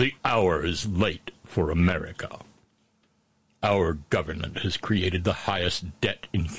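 very low, hushed, ominous doom-laden rumble. Speaker repeating the opening line in a mock-threatening deep voice. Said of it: "nothing says threat to the country quite like a deep".

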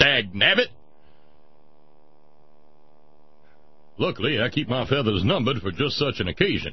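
blustery, blustering cartoon rooster voice. Reading out a typed message, quoting lines in a Foghorn Leghorn voice. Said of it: "you sound like Foghorn Leghorn".

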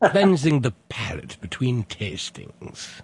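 put-on slow, sing-song British accent.

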